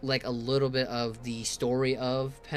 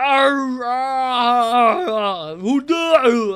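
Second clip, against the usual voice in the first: mock-angry put-on voice, louder and slower; 12 semitones higher, 15 dB louder than usual. Speaker, trying to read, imitates him yelling: angry Arnold Schwarzenegger impression. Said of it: "He angry. / You know that's Arnold Schwarzenegger".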